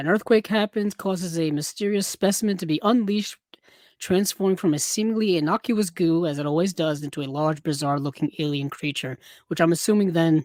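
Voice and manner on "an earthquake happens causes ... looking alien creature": usual speaking voice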